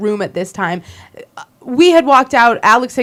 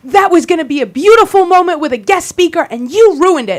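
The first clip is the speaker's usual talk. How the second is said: high-pitched screaming tirade; 7 semitones higher than usual. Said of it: "And he's screaming at me".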